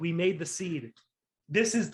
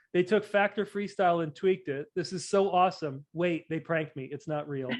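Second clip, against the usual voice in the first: usual speaking voice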